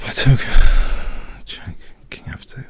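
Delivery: whispering. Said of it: "why I'm whispering".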